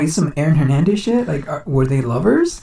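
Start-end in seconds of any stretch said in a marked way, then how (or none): none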